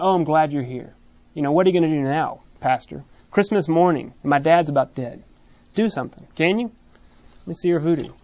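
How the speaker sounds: snide, needling, mocking tone. Retelling a daughter's jab at the pastor at a deathbed: imitating a snide jab. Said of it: "it was a jab".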